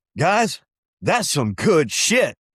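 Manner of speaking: put-on slow, drawn-out, swooping North Carolina accent. Retelling what Harold said after tasting the blend: Harold's North Carolina accent. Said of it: "he's got this great North Carolina accent".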